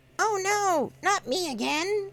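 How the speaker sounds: very high-pitched, squeaky cartoon voice. Showing off a cartoon impression during a coin video, Orko voice. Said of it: "That's my best Orko voice".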